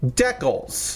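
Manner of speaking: "decals" pronounced in a Canadian-style regional way. Showing where decals go on a kit, a builder says the word with Canadian-style pronunciation. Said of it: "Or if you're in Canada and some parts of Europe".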